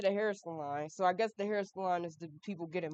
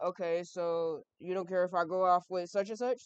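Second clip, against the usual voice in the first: ordinary talk, nothing marked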